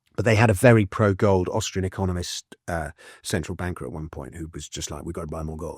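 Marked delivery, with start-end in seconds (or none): 5.0-5.8 put-on speaking with a Russian accent. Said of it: "That's a very good Russian accent".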